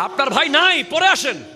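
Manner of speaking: high, harsh, rough, dismissive voice. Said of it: "কঠিন কর্কশ কণ্ঠে কথা বলতে হবে".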